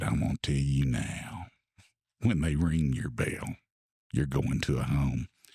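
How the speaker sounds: deep, throaty, guttural voice like one possessed. Retelling what the wife said at dinner: imitating her guttural possessed voice. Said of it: "that inner guttural voice that you may be possessed".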